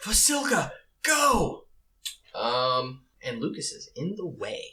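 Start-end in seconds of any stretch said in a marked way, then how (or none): 0.0-1.6 very high, screamed out. Voicing the angel calling to an ally mid-swing: screaming out a command. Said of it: "manages to scream out in the middle".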